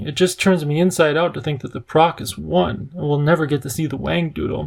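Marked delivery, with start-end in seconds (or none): none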